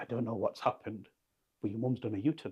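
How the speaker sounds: flustered, panicky delivery in total panic. Retelling a doctor's news in the hospital room, imitating a panicked doctor. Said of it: "this doctor comes in in total panic".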